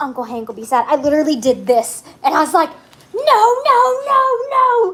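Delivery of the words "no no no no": mock very high, stretched-out panicked screaming. Telling how she jumped up after seeing it, retelling herself screaming no. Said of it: "I'm sitting there screaming".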